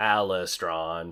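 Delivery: put-on clanky, metallic, machine-like robot voice. Voicing a machine creature naming itself: clanky metallic voice. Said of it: "in a very clanky, metallic way".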